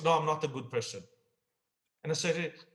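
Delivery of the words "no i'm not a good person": sour, grumpy, grudging, grumbling voice. Retelling a police officer's reply to being called good: imitating a grumpy voice. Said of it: "in a grumpy, uh, voice".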